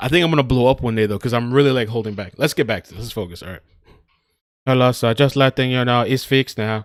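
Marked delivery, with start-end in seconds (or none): 4.7-6.9 flat, monotone robotic voice. Retelling what a caller said when he called, in a robot-like voice. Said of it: "this guy that sounds like a robot calls me".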